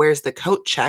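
mock, imitated yelling. Telling listeners about Mary at a party, retelling Mary yelling. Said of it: "just yelling".

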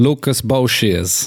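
put-on Creole accent. Trying out a character's name in the Creole-style accent the handler suggested: put-on Creole accent. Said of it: "try and speak, uh, like this".

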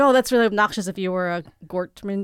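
normal talking voice

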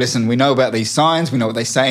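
ordinary delivery

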